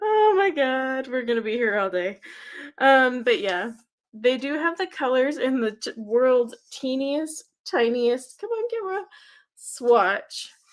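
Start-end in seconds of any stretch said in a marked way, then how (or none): 0.0-2.2 talking through laughter. Looking at tiny print on a tin lid, laughing while talking. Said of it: "I'm laughing because look how tiny".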